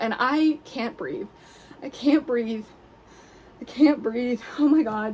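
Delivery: messy, unpretty, breathless sobbing. Learning from a director's message about getting the first lead, ugly crying. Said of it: "I am such a not pretty crier".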